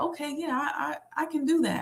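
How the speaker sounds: soft, high-pitched delivery.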